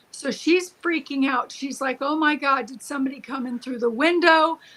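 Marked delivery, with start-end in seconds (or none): none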